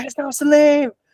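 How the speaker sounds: mock lung-bursting crowd scream, very high and shrill. Retelling people in the crowd during a fight: imitating people screaming. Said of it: "screaming their lungs out".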